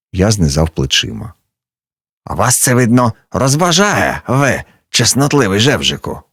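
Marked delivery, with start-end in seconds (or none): 2.3-6.2 jeering, scornful, mocking, pitched-up voice. A man met in the corridor answers the narrator; mocking. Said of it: "спитав він глузливо".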